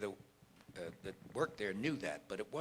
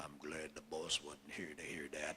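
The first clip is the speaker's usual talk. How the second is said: very deep, very low bass voice; 8 semitones lower, 10 dB quieter than usual. Retelling what the chauffeur said in the elevator: imitating a very deep voice. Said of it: "this very deep voice saying".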